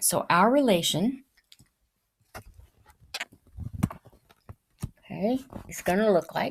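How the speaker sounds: speech muffled by pencil in mouth. Explaining a math answer while talking with a pencil in mouth. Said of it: "I put my pencil in my mouth".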